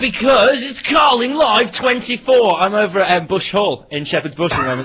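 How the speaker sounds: very excited chatter. Answering why he has been awake for hours: sounding very excited. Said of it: "You sound very excited".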